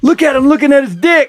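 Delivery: very high, shrill shout across a room. Retelling what was yelled during a Super Bowl play: imitating himself yelling. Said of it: "And I yell out loud".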